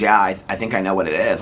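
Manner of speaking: ordinary delivery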